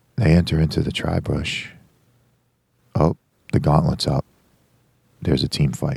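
televised golf announcer play-by-play commentary voice. Replaying how they narrated a whole match: hushed golf-announcer voice. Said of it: "I did a whole match in a golf announcer voice. I was just super quiet".

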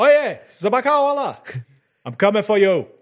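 shouting. Drawing a pistol and calling down into the station: shouting. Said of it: "And shouting out".

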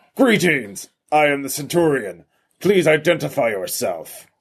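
robotic guard voice. Voicing a large guard robot greeting players at a vault: robot guard voice. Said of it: "it says".

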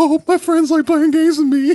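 high, teary, nervous voice, half-crying. Imitating own nervous self playing video games: mock crying a little, nervous. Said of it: "crying a little bit, like".

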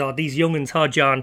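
normal talking voice

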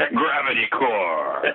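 movie trailer announcer voice, core drawn out. Following the hosts' rule for saying a term, movie trailer guy voice. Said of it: "say it like the movie trailer guy".

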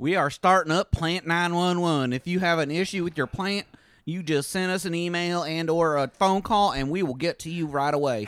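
put-on Southern accent. Imitating the plant store owners: imitating plant store owners' southern accent. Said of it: "they have Southern accents".

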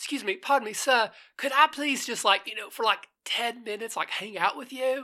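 poor fake British accent. Imagining a monstrous-looking creature asking a man to hang out, bad British accent. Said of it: "mine has a bad British accent".

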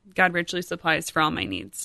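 normal talking voice

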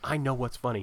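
ordinary talk, nothing marked

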